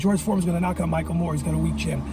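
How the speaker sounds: plain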